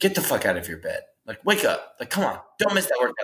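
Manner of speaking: fierce, in-your-face, aggressive, swooping motivational push. Imitating David Goggins pushing people to train: imitating David Goggins, aggressive. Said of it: "he's so aggressive in everything that he does".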